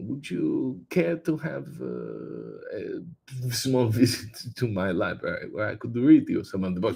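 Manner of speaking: put-on vampire voice. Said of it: "the serious Bela Lugosi impression".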